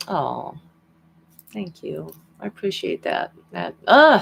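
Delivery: choked-up voice catching, close to crying, fighting tears. Thanking chat for kind messages on an emotional day, holding back tears. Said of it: "Try not to cry".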